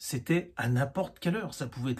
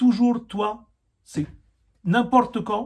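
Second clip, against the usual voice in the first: put-on very loud, drawn-out, pitched-up Tamil accent; 6 semitones higher, 9 dB louder than usual. Retelling what a tamil coworker said in the car: imitating a tamil man's accent. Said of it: "Avec son accent".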